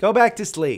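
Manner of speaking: loud, high-pitched, carrying yell. Host yells at the dogs in the background, yelling. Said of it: "Sorry, I'm yelling".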